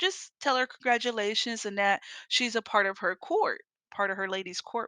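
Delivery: ordinary talk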